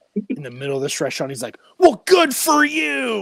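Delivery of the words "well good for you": very high, loud, stretched-out shout. Telling a story about someone's dad yelling at a kid in a restaurant: retelling a yell. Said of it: "just yells at this kid".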